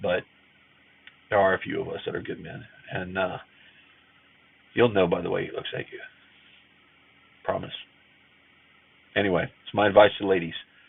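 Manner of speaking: tearful, emotional, crying voice. Speaker giving advice to women, crying. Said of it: "Sorry for crying".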